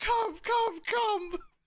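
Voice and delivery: several very high voices calling out, echoing. Narrating a scene as three voices call down an alley: high-pitched voices. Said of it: "You'll hear three high pitched voices echo".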